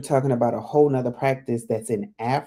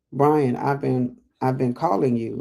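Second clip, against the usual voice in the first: plain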